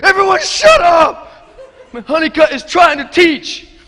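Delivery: high, loud shout.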